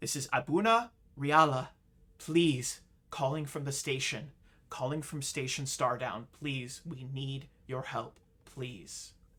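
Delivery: urgent, desperate, begging, pleading voice. Voicing a distress call from a failing station: desperate pleading for help. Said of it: "the voice sounds incredibly desperate, and they are pleading for help".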